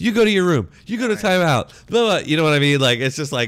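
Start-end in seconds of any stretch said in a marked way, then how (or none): 0.0-1.9 put-on yelling, higher pitch and louder. Retelling what gets yelled at the kids all day: imitating yelling at kids. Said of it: "so I have to constantly yell at them".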